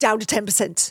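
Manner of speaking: put-on British accent. Recalling what he would say right before an episode, in a put-on British accent. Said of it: "in this British accent".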